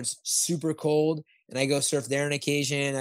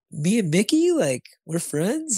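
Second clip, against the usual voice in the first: mock bubbly, swooping, high little-kid excitement; 6 semitones higher, 5 dB louder than usual. Speaker retelling Callie's reaction to being told she and Mickey are friends, imitating excited Callie. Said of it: "she gets all excited".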